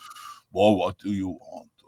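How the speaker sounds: big, deep-set voice with put-on French accent. Speaker imitates how their very French father talked: booming French accent. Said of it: "he talked like this".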